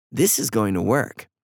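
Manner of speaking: usual speaking voice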